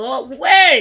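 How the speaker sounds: loud yelling shout. Speaker yells at an air insect to go away, shouting. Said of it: "I'm sorry if I'm shouting".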